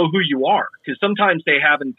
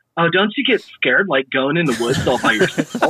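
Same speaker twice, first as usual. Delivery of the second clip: put-on straight Southern California valley girl voice. Speaker retelling what people in SoCal ask, valley girl voice. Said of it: "You sounded like a straight up valley girl".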